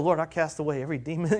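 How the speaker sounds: under-the-breath murmur. A speaker retells praying over someone, acting out muttering under the breath. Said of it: "So under my breath".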